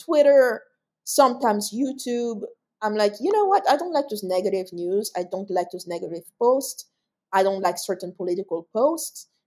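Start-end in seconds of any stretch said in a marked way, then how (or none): none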